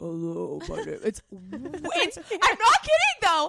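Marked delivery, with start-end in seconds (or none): 0.0-1.0 imitated deep woman's voice. Describing a woman's surprising voice, speaker imitates her deep voice. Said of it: "speak in a deep voice".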